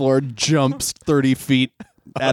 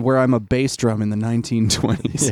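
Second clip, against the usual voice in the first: ordinary talk, nothing marked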